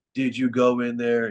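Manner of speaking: mock sarcastic tone. Retelling what the officer asked: imitating a sarcastic question. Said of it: "being sarcastic".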